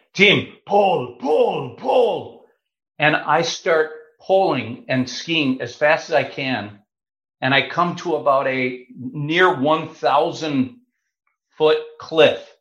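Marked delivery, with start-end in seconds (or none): 0.1-2.4 put-on heavy Austrian accent laid on thick, swooping pitch. Retelling what the paraglider behind the speaker said, thick austrian accent. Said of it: "in a thick Austrian accent".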